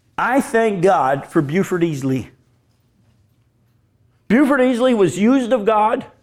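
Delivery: crying while speaking. Thanking god for a mentor while telling the story: tearful. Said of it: "can't even talk about it without crying".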